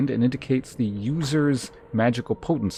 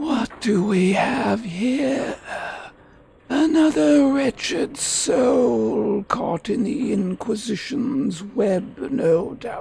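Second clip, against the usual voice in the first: very high-pitched spectral ghost voice; 11 semitones higher than usual. Speaker picks a voice for a ghost character and speaks as it: ghost voice. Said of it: "What's our ghost voice?".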